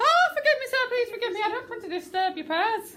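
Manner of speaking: quick put-on Irish accent. Performing a scripted line for the group, in a fast irish accent. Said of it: "You've got to be really fast".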